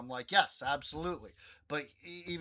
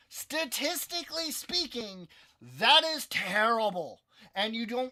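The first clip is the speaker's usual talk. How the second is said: high, nerdy put-on voice; 9 semitones higher, 5 dB louder than usual. Retelling their own past remark in a conversation, using a nerd voice. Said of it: "the nerd voice".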